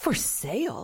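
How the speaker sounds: gasping delivery. Narrator reads a character reacting on seeing a sign, gasping. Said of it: "Gasped Amelia".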